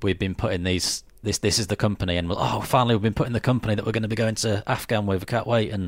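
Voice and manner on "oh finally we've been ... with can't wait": ordinary delivery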